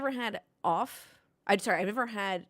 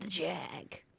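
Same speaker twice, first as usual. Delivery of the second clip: put-on old British man voice, quieter; 3 semitones lower, 11 dB quieter than usual. Saying a car's nickname while trying a Jeremy Clarkson voice. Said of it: "I can't do it like, uh, Clarkson".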